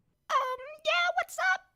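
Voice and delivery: very high, tiny, mousy little voice. Stepping into the kitchen and speaking up first, in a voice like a mouse. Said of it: "your voice like a mouse".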